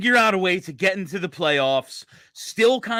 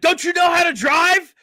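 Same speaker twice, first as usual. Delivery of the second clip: mock very high-pitched, shrill, loud yelling; 10 semitones higher, 5 dB louder than usual. Describing a sketch where one man yells at another in a parking lot: retelling a yell. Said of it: "one dude's yelling at him like".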